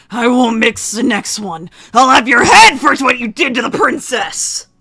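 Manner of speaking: loud, high-pitched growling voice. After Gus misses his swings, he threatens the kidnapper: Gus growling. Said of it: "and he growls".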